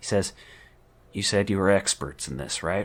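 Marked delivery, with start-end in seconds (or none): 1.1-2.9 hushed, half-whispered voice. Voicing a detective speaking to a player mid-fight: detective half-whispering. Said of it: "whispers to you".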